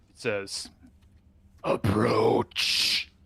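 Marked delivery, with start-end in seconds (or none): 1.7-3.1 loud, grinding, grating stone-on-stone rasp. Voicing a giant creature commanding a player to approach: grating stone-on-stone voice. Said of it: "in this grating, stone-on-stone voice almost".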